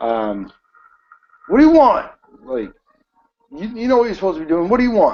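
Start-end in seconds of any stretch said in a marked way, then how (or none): 1.5-5.2 very high, rough, gruff voice. Game master voicing someone inside after a player knocks on the door: pretty gruff voice. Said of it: "you hear this this pretty gruff voice".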